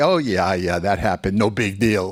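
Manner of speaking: ordinary talk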